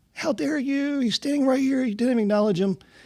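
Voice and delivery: play-acted, very high, indignant scolding yell, lady voice. Retelling a lady yelling at them at the speakeasy: imitating a lady yelling. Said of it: "this lady started yelling at me".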